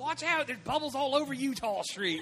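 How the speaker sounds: put-on Baltimore accent. Reacting to a story about Baltimore, doing a Baltimore accent. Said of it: "without hearing the accent in my head".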